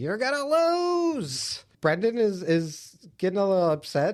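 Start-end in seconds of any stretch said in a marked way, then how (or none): 0.0-1.6 very high, taunting mock yell, "lose" stretched. Retelling how a neighbor heckles from his window: imitating someone yelling. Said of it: "starts yelling".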